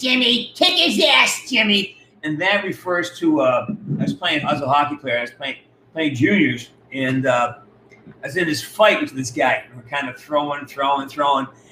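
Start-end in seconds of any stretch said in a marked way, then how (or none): 0.0-2.0 put-on high, drawn-out holler in a tough grandmother voice. Recalling what a tough polish woman would shout, speaker imitates her voice. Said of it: "And this voice has it".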